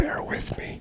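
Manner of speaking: soft whisper.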